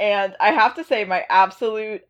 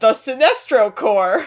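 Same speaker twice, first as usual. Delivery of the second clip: put-on flustered, panicked, blurted delivery; 2 semitones higher than usual. Retelling a comic scene where Booster Gold blurts a name: imitating panicked Booster Gold. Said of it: "Booster panicked and went".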